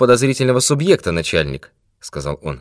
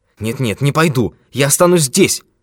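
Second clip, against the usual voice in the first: exclaiming, crying out. A stranger refuses to go to the man's study, exclaimed. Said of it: "воскликнул незнакомец".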